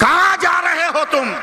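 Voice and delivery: shouted call.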